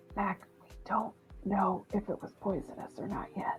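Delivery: very quiet, private whispered aside. Whispering in character to Mag about the bottle: whispering. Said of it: "I'm just sort of gonna whisper to Mag".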